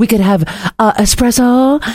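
bad, terrible put-on French accent. Quoting a woman's reply in a story, in a terrible French accent. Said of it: "this is a terrible French accent".

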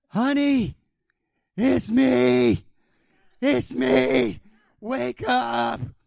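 very slow, rough, loud, drawn-out desperate pleading scream. Recounting the night, imitating their wife screaming from under the pillow. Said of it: "she's screaming".

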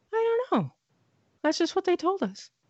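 very high-pitched, startled, surprised delivery. Retelling a doctor's answer to a question: imitating a surprised doctor. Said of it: "She looked really surprised".

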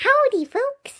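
very high-pitched, doll-like voice. Voicing a Cabbage Patch Kid doll greeting the folks: voicing the doll Eve. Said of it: "is that Eve?".

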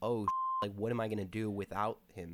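ordinary talk

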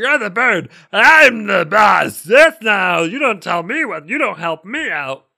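loud, high, over-the-top cartoon caveman voice. Retelling a man's reply to someone offering help, in a Fred Flintstone voice. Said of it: "Did you like my Fred Flintstone?".

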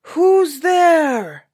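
booming, loud giant's roar, pitched very high. Reading a story where Jack knocks at the castle gate, roaring giant. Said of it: "roared the giant".

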